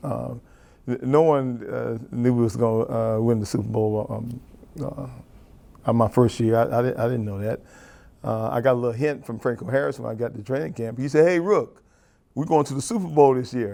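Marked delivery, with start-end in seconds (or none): 11.3-13.8 mock firm, emphatic, confident, sure-of-itself tone. Retelling what was said to a rookie at training camp: imitating an emphatic, confident statement. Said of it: "He said that very emphatically, too, and very confidently".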